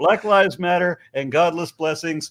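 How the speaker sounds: plain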